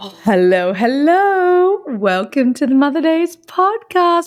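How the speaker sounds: voice pitched very high. Opening the podcast while watching a baby: voice going really high. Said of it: "My voice is going really high".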